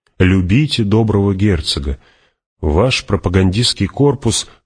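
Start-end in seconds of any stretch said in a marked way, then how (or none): none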